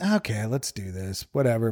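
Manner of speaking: tired, can't-be-bothered, low, weary, drawn-out voice.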